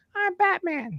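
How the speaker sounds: put-on squeaky, very high-pitched kid voice. Retelling a childhood home movie, imitating young Batman: squeaky kid Batman voice. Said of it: "Batman sounded like he was".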